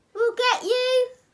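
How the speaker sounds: put-on high, loud, sarcastic, drunken voice.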